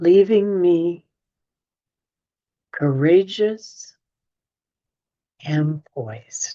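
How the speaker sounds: slow, unhurried reading pace. Rereading an affirmation again for listeners who missed it: reading slowly. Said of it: "I'll read that slowly again".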